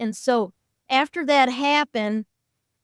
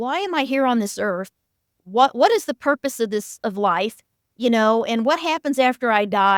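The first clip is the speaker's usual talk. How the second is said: plain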